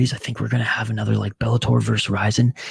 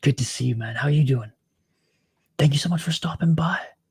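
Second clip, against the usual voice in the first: hushed, whispering voice, higher; 4 semitones higher than usual. Greeting and thanking a viewer for stopping by, whispering. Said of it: "you're whispering too loud".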